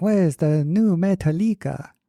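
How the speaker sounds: put-on Zuni-accented speech. Retelling how customers asked for albums, imitating a Zuni accent. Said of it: "I like the, the Zuni accent".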